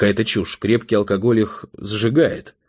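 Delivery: ordinary delivery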